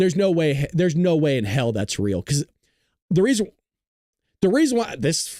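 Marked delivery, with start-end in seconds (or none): 2.2-5.4 stuttering, repeating the first words. Reacting for listeners to something they cannot believe, stuttering. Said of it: "I'm stuttering because I".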